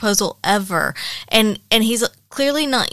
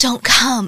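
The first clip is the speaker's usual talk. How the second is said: voiced stage whisper. Retelling a book scene in a packed elevator: imitating a half-whisper. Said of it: "and he whispers it".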